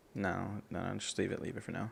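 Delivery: quiet, hushed voice.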